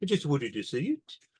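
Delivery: put-on Birmingham (Brummie) accent. Voicing a man whose liverpool accent you cannot do, use a put-on birmingham accent instead. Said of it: "I'm doing him with a Birmingham accent".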